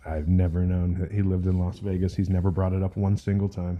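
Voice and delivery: ordinary talk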